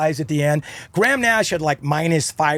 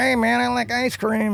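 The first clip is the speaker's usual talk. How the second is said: slow, pitched-up mumble under breath; 5 semitones higher than usual. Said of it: "he's kind of like mumbling under his breath".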